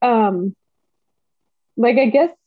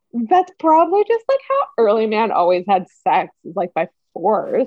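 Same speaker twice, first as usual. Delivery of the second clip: condescending, talking-down tone. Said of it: "the way he says it's so condescending".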